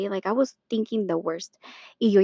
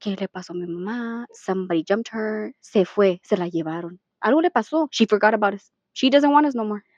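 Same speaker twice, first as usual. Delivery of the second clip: ordinary delivery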